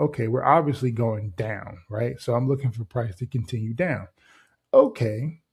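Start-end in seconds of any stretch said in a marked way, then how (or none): none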